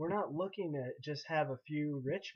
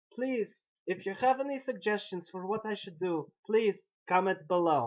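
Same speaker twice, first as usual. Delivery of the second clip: bad put-on Russian accent, higher and louder; 6 semitones higher, 8 dB louder than usual. Playing someone from northern Siberia asking for diet advice: crummy Russian accent. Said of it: "crummy Russian accent".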